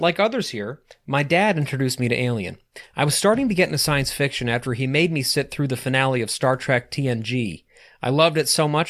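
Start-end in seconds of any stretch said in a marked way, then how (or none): none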